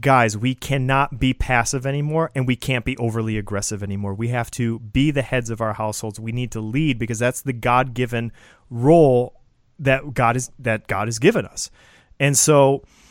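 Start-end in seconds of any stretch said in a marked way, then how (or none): none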